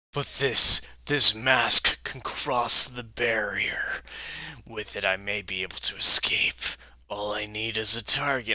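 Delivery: deep demon voice.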